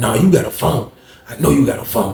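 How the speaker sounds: quiet, hushed, secretive and insistent murmur. Retelling a man insisting someone has a phone, imitating his hushed voice. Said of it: "He was talking like this for nobody don't hear him".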